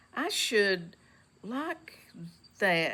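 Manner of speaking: very slow, lingering, drawn-out delivery. Narrator reading a character's reply to Mary about the secret garden, very slowly. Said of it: "he said very slowly".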